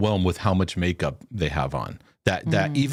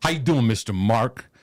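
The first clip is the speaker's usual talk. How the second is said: mock blunt, hearty, punchy, emphatic delivery; 2 semitones higher than usual. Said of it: "he's always yelling everywhere".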